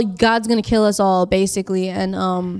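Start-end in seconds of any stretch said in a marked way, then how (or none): none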